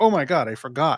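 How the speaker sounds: ordinary talk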